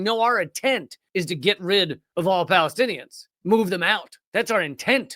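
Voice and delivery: ordinary talk, nothing marked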